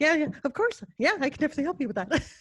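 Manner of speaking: high, loud, super-excited, over-eager gushing chatter. Recounting taking work calls while wired, imitating own super-excited talk. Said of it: "super excited".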